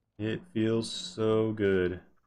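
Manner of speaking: slow, savoring, drawn-out "so good", "so" stretched.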